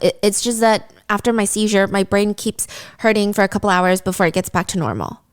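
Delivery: ordinary delivery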